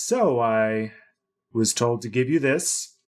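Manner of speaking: female character voice. Voicing a new innkeeper handing over a pouch: woman innkeeper's voice. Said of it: "the voice of a woman this time".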